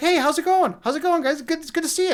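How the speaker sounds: bouncy, hyper, very high-pitched, loud chatter. Imitating how a man really talks, as a buddy reported: imitating a hyper, high-pitched man. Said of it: "he's like really like hyper, and he's got like this really high pitched voice".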